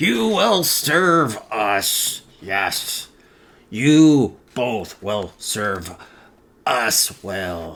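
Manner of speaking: ghastly dreadful tone. Reading a story aloud, voicing the voice the character hears: ghastly voice. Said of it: "That ghastly voice".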